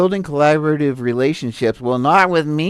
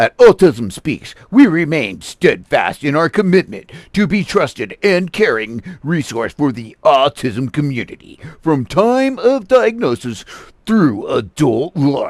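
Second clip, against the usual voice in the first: strong, powerful, commanding voice. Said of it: "we're going to do the power voice".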